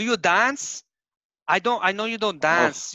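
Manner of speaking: put-on Ecuadorian accent. Imitating an ex-girlfriend asking whether he dances: imitating an Ecuadorian accent. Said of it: "how would you imitate the Ecuadorian accent?".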